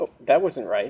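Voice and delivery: ordinary talk, nothing marked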